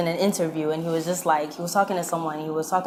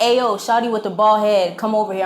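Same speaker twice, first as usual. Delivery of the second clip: raised, loud hollering yell; 4 semitones higher, 4 dB louder than usual. Retelling a guy calling out while walking from a club: imitating a guy yelling. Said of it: "this one guy yells".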